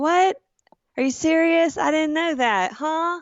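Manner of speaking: put-on cute, played-up Southern accent. Retelling how the speaker acts in person, playing up a Southern accent. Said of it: "I use my adorable personality and Southern accent".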